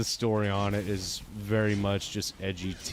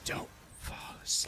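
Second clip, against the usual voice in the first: eerie hushed breathy whisper, barely voiced. Retelling what Jeff the Killer says to someone waking up: Jeff the Killer whisper. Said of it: "him whispering".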